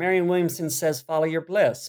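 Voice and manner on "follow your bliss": ordinary delivery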